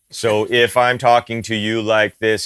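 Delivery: dull, flat monotone, level pitch, uninflected. Explaining vocal delivery to the other speaker, demonstrating a flat monotone. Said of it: "kind of in monotone and whatever".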